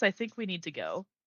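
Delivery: ordinary talk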